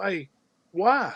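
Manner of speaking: put-on worried, protective, concerned fifteen-year-old boy's voice. Retelling the son's question during an argument, imitating concerned teenage son. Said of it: "in his concerned fifteen year old, that's my dad voice".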